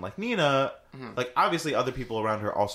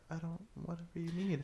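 put-on meek, mild voice, higher and quieter; 7 semitones higher, 12 dB quieter than usual. Retelling how Nina talks at first in the movie: imitating Nina's super mild voice. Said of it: "she's super mild and she talks like this".

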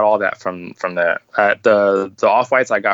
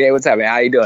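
put-on Boston accent; 3 semitones higher than usual. Retelling how a man greeted him on meeting: Boston accent. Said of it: "like in his Boston accent".

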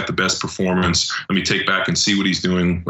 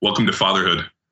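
put-on smart-aleck voice. Retelling what Robb Wolf said on a call: imitating Robb Wolf's smart-ass tone. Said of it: "kinda like a smart ass".

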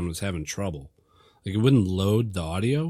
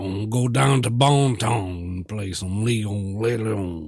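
Louisiana Cajun accent, man's voice. Joking about how to say a game's name, saying it like a Cajun guy. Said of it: "Say it like a Cajun guy".

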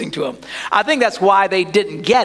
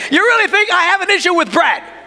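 put-on, shrill, very high shouting; 12 semitones higher, 4 dB louder than usual. Retelling a scolding of disciples about bread: imitating someone yelling. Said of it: "So he's yelling at him".

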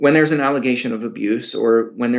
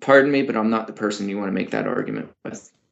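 mock point-blank blunt, low, swooping delivery; 4 semitones lower than usual. Retelling what they say to people who argue with them: retelling a blunt reply. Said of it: "very bluntly say".

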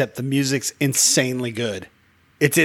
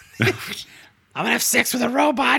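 very high, bold character voice; 10 semitones higher than usual. Imitating another speaker as a joke: imitating Doug. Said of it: "I'm just imitating".

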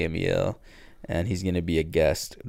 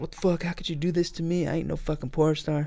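put-on, very high-pitched, indignant, furious rant; 10 semitones higher, 5 dB quieter than usual. Retelling a show scene where she gets mad: imitating someone getting mad. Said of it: "she gets all mad".

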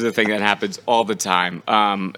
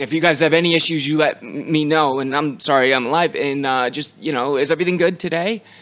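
awkward, clumsy call-out, pitched up; 5 semitones higher than usual. Imitating the SAG rep calling out over the video village: imitating someone shouting awkwardly. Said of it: "He shouts over the entire video village".

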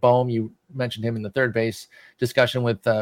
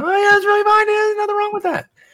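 raised voice on "fine", higher and louder; 5 dB louder than usual. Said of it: "the more I raise my voice".

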